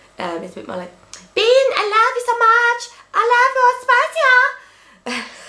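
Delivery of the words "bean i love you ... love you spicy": very high, very slow put-on voice, every word stretched. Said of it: "Which is [name] voice".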